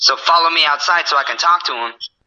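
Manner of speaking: normal talking voice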